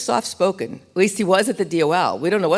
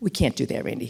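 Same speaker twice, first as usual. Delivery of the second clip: hushed, very quiet near-whisper; 4 semitones lower, 6 dB quieter than usual. Retelling a friend's reply in a meeting, imitating John speaking very quietly. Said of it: "John very quietly said".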